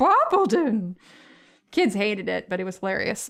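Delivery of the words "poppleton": put-on goat character voice. Recalling reading the Poppleton book to kids, the goat neighbor calling out: goat character voice from Poppleton. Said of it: "voice we used for the goat".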